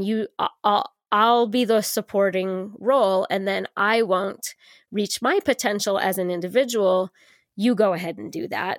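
ordinary delivery

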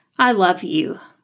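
emotional, after a shaky, trembling breath. A woman thanks a man for helping her and her son, after a shaky breath. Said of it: "She took a shaky breath".

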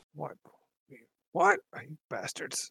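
put-on elderly man's voice. Game master voicing the man at the door after the players' sarcastic reply, in an old man voice. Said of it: "I'm an old man kind of way".

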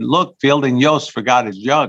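put-on Scandinavian-accented voice. Storyteller quotes an equipment manager speaking to his athletic director: Scandinavian accent. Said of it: "he's saying it in a Scandinavian accent".

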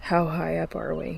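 plain

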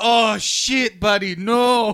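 put-on very slow, very high, loud, drawn-out Mexican accent. Retelling what another man said back, in a Mexican accent. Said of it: "he was talking like that back to you".

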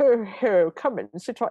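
creepy, very slow voice, every word drawn out. Retelling the line a man says to kids, in a gross Santa voice. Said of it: "It's a gross Santa voice".

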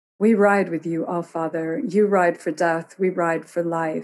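ordinary delivery

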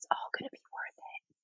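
hushed, breathy, very soft whisper. Retelling what a nine-year-old boy said to the speaker, quoting him in a whisper. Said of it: "he actually whispered".

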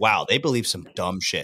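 ordinary talk

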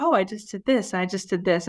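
normal talking voice

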